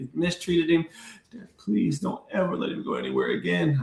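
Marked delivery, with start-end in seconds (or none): 1.3-3.8 mock breathy whispered crying voice. Father retells his daughter's plea, imitating her crying. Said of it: "she was like literally crying like that".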